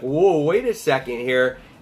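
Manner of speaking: ordinary talk, nothing marked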